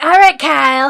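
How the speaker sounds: very loud, high-pitched shouted voice with a lisp. Showing how people sound doing Trump: Cartman voice with a lisp. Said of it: "like, a lisp".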